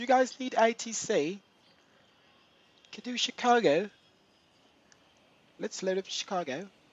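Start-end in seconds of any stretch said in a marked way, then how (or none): 2.9-6.5 quick, fake British London accent. A player speaks during a game while a teammate questions his accent: put-on London accent. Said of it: "Why are you doing a London accent".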